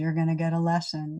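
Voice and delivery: normal talking voice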